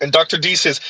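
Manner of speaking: ordinary talk, nothing marked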